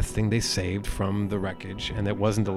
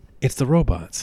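dry, sarcastic, disbelieving tone; 3 semitones higher, 3 dB louder than usual. Quoting a movie character nobody believes about robots: imitating a sarcastic line. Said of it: "he says sarcastically".

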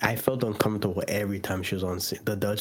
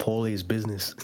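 normal talking voice

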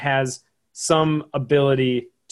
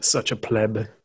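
smooth put-on voice, lower; 3 semitones lower than usual. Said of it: "Smooth voice".

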